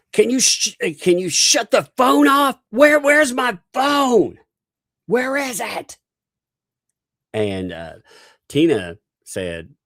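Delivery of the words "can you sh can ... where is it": very high-pitched, shrill yelling. Retelling how L P yelled about the phone: imitating L P yelling. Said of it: "L P starts yelling".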